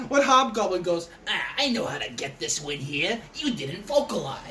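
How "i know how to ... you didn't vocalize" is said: scheming cartoon anime villain voice. Acting out an imagined opponent during a game, in a Yu-Gi-Oh villain voice. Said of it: "Why do you sound like a Yu-Gi-Oh antagonist?".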